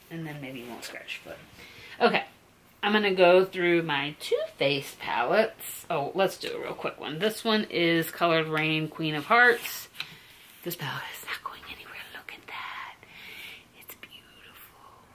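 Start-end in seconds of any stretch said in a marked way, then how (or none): 10.6-14.8 soft, hushed whisper, barely voiced. Going through makeup palettes one by one, whispering. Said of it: "I don't know why I'm whispering about it".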